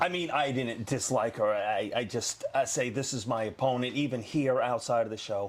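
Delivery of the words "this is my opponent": normal talking voice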